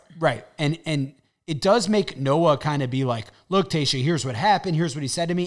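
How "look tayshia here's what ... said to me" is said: plain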